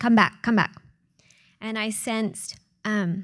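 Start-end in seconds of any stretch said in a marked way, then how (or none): 0.0-0.7 loud, urgent yelling at the top of the voice. Retelling how the translator yelled in front of her face: imitating someone yelling.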